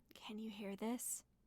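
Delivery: very quiet whisper. Speaker checks whether the others can hear, whispering very quietly. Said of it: "I'm gonna whisper as quietly as I can".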